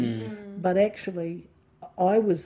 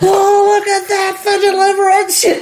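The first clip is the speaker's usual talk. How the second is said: put-on yell, much higher and louder; 13 dB louder than usual. Retelling what he yelled across the movie theater during The Green Mile, retelling a yell. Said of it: "I'm yelling that right out across the whole movie theater".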